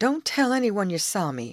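high, earnest, pleading voice. The youth answers Betty's offer of help, begging earnestly. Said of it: "begged the youth earnestly".

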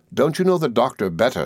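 ordinary delivery

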